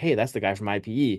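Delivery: ordinary delivery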